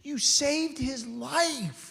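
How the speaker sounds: play-acted, very slow, high, tearful thanks, "life" stretched. Retelling a shelter worker thanking a man, imitating someone crying. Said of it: "she's crying and she's like".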